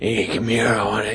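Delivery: hot raspy voice. Speaker tries out a voice they are describing: hot, raspy voice. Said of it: "like that hot, raspy".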